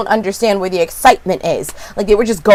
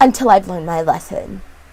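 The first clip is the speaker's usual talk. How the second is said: ordinary talk, nothing marked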